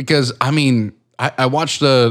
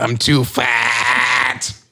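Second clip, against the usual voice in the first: mock elderly Brooklyn woman voice.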